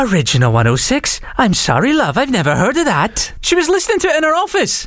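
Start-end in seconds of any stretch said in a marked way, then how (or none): 0.0-3.3 attempted Welsh accent, slower. Retelling what a nurse said to the speaker, attempting her Welsh accent. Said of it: "she's Welsh, I'm going to try the accent".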